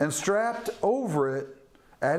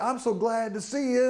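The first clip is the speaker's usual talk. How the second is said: put-on sham friendliness, overly welcoming; 7 semitones higher than usual. Acting out Joab greeting Amasa: Joab faking friendliness. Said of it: "he throws Amasa off like".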